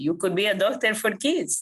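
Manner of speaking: put-on heavy Cuban accent. Retelling a man's reply to your question, in a thick Cuban accent. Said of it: "in his thick Cuban accent".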